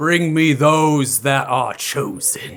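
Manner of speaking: booming, very loud, thunderous monster voice. Voicing a hulking sea creature on the deck: thunderous monster voice. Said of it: "as a thunderous voice emerges out towards you all".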